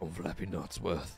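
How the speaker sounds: put-on low, raspy character voice. Inventing a voice for a character: low raspy Flappy Nutsworth voice. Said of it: "I'm going to do a low raspy voice that doesn't take a lot on my throat".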